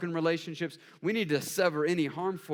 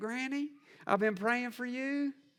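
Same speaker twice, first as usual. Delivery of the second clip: put-on higher-pitched Southern accent; 7 semitones higher, 4 dB quieter than usual. Retelling what she says to her granny, in a southern accent. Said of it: "my southern accent starts coming out".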